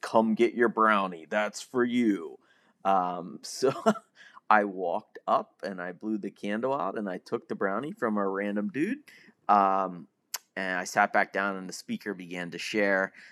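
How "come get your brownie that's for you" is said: booming, announcer-like voice. Retelling what the chairperson said into the microphone, booming voice. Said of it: "so it was this booming voice".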